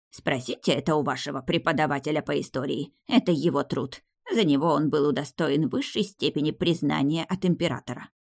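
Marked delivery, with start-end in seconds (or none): none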